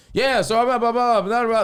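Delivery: mock loud, very high rambling. Recounting his own set before a veteran comic, retelling raising his voice. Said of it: "just raising my voice".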